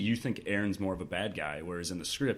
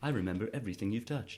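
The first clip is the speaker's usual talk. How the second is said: put-on mechanical, robotic voice; 4 dB quieter than usual. Discussing a scene, quoting the machine's line in a robot voice. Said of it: "That's my robot voice".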